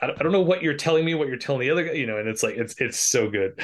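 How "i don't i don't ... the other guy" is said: high, fast, frustrated outburst. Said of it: "getting all fr-".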